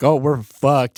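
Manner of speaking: sudden, panicked, alarmed exclamation. Retelling being stopped by police while on probation: imitating own past panic.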